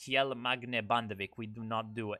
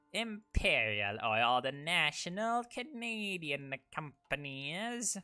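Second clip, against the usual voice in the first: cheesy, cringey fake British accent, pitched up; 6 semitones higher than usual. Riffing on Canadian oil companies, the speaker slips into a cringe British voice. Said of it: "I'm doing the cringe British voice".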